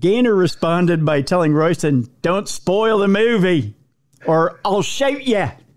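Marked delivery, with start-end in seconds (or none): 2.2-5.5 terrible, clumsy put-on Australian accent. Recounting court documents, quoting one man's reply to another, in a bad Australian accent. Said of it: "I know it's a terrible Australian accent".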